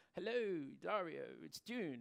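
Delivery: put-on speaking with an English accent. Retelling a lady's phone call to the salon, in June's English accent. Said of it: "she's got an English accent".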